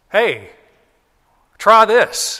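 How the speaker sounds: high, loud yell from far off.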